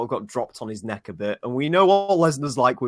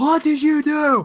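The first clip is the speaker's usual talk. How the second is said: put-on screaming, higher and louder; 6 dB louder than usual. Retelling a wrestling moment, imitating Paul Heyman screaming. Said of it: "Paul Heyman was sat screaming".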